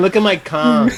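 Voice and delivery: ordinary delivery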